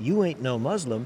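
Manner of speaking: ordinary talk, nothing marked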